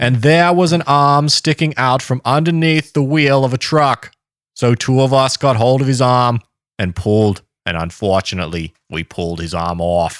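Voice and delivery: put-on Boston accent throughout. Telling a story: JFK Boston accent. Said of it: "it's just your J F K accent".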